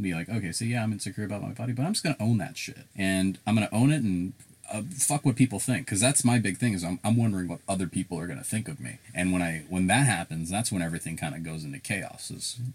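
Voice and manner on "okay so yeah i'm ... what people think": normal talking voice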